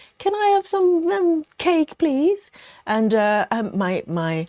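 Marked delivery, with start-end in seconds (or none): 0.2-2.5 tiny, very high, squeaky squirrel voice. Showing bunny hands like squirrels asking for treats: imitating squirrels asking for food. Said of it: "like my squirrels, going".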